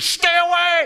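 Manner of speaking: shrill, high-pitched, loud shouting scream. Describing how the Spirit warns you, imitating God screaming. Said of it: "Like God would scream".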